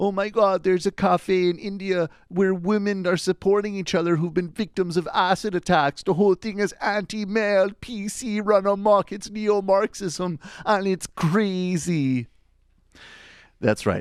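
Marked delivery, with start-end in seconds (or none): 0.0-12.3 very high, loud put-on voice, crazily stretched out. Doing a shout-out bit as an imitation: Jordan Peterson voice. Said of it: "I'm going to just go into this shout out in the Jordan Peterson voice".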